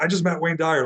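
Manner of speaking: frantic, high-pitched, star-struck excited voice. Retelling the mother back at her seat: imitating someone frantic. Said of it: "she was frantic".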